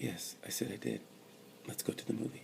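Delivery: eerily quiet, almost whispered, scary-quiet. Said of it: "that scary kind of quiet".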